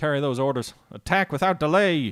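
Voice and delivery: put-on loose Southern American accent. Playing as the Union in a game, calling out orders, in a quasi-southern accent. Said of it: "It's kind of like a quasi-southern accent".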